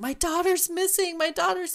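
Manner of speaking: high, loud, frantic mock cry.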